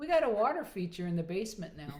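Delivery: ordinary delivery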